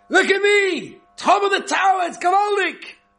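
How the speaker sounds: put-on very high, shrieking child's crying scream. Telling of a child who stacked chairs and climbed the tower: imitating a child screaming.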